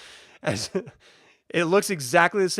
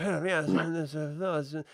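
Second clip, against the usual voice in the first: muttering under breath, quieter; 8 dB quieter than usual. Describing a gentleman sitting next to a chair, voice him muttering under his breath. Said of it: "sort of muttering under his breath".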